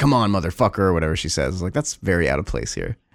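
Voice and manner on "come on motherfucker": put-on hardcore, tough-talking delivery. Retelling a movie's last scene where she gets hardcore: imitating a hardcore tough line. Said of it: "really hardcore and is like".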